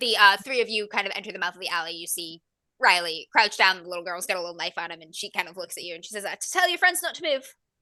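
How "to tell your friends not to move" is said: put-on terrible, barely Irish accent, pitched up. Narrating the scene to the players, voicing the little girl with a knife: terrible irish accent. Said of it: "in the least Irish accent I possibly can".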